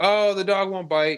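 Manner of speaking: high, mild mock yell, called out across distance. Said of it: "she yells out to me".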